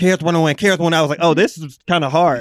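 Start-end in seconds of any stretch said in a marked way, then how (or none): 0.0-0.9 rapid-fire, rattled off at top speed. Recalling trying to say a phrase quickly, rattled off really fast. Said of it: "I started trying to say it really fast".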